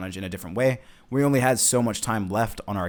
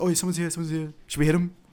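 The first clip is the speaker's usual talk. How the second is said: mock panicked voice, higher pitch; 7 semitones higher than usual. Retelling how Ian reacted when someone showed up: imitating Ian panicking. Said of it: "Ian's panicking. He's a little panicked".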